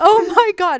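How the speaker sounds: mock, very high, very loud, shrill, thrilled voice. Retelling shooting his first ever deer with a bow; retelling his excited exclamation. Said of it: "I was so excited about this deer".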